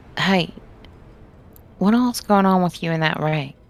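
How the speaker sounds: quiet, hushed, confiding aside. Voicing Peach addressing Araya in the game, Peach speaking quietly. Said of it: "Peach would say quietly to Araya".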